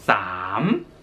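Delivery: 삼 dropping low then climbing back up. Teaching how to say thirty baht in thai: dipping then rising tone on 삼. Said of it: "성조가 있어서 내렸다가 올리면서".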